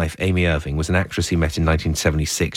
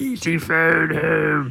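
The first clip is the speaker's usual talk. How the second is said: alien creature voice, much higher pitch; 11 semitones higher than usual. Urged by the other speaker to do the E.T. voice: E.T. voice. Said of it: "I think you can do the E.T. voice".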